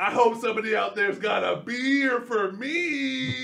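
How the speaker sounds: high hype-announcer call, "me" stretched. Retelling how a derby announcer worked the crowd: imitating a hype announcer. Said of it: "he's like".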